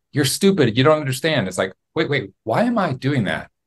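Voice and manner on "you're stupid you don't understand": peevish, petulant, annoyed, irritated voice. Describing arguing in YouTube comments, the speaker mimics their own mock-petulant voice. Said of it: "a very petulant voice".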